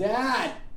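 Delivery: high, frantic, desperate yelling.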